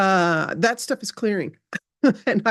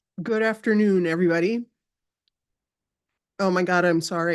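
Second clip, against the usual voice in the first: speaking with mouth full, talking around it. Greeting everybody, the speaker talks with a mouth full of cough drops. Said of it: "I have a mouth full of cough drops".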